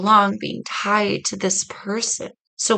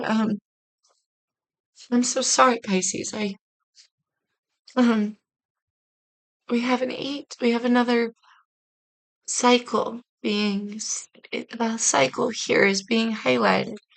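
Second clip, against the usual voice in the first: slow, choked-up voice, near tears, words catching; 2 semitones higher, 3 dB quieter than usual. Giving a reading to Pisces listeners, choked up. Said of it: "I'm getting all choked up here".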